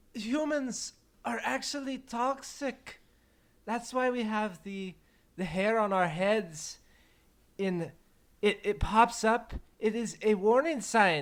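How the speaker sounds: bad fake French accent. Speaking as a character after saying oui, oui: terrible French accent. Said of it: "my French accent is absolutely terrible".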